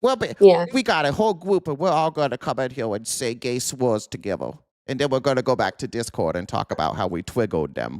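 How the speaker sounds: mocking, babyish, sing-song whine-talk. Mocking incels who all travel together: put-on baby voice. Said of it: "the baby voice kind of a thing".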